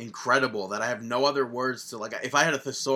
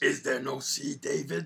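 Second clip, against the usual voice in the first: rough, creaky, ground-out puppet voice; 2 semitones higher, 4 dB quieter than usual. Asking David a question mid-discussion, in a terrible Cookie Monster impression. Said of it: "terrible C. Cookie Monster impression".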